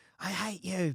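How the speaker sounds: put-on upset pre-teen yelling outburst. Retelling a brother's argument with his parents: imitating a brother yelling. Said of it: "yells at mum and dad".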